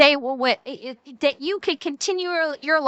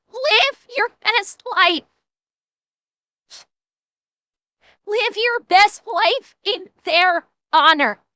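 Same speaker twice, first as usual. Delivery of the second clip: crying, tearful while speaking; 7 semitones higher than usual. Honoring the hundreds of thousands of people who gave up their lives, crying. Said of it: "I knew I was gonna cry".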